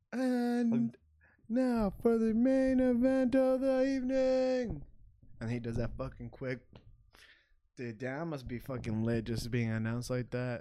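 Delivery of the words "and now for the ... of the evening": very slow, very high ring-announcer build-up, And stretched. A podcast host, told he sounds like an announcer, does a Bruce Buffer impression. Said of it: "Bruce Buffer".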